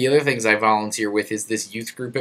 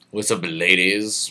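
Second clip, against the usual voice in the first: ordinary talk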